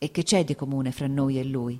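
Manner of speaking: plain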